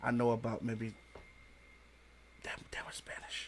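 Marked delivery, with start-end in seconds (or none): 2.4-3.5 soft, secretive whisper. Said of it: "I'm whispering like she can't hear me".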